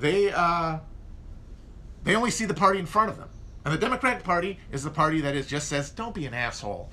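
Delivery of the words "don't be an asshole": low, coaxing, wheedling voice. Acting out what the Democratic Party says, in a mock-wheedling voice. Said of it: "in a wheedling voice".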